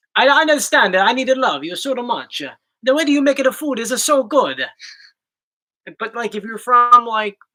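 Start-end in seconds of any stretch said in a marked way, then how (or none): 0.1-4.6 clearly put-on, fake Italian accent. Speaker showing how an italian accent sounds, in a put-on italian accent. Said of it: "Italian is more like".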